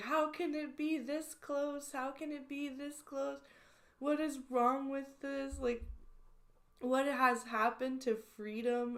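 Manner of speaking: exasperated, high, frantic ranting wail. Retelling a video of a person upset about a close result: imitating someone screaming. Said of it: "screaming about how".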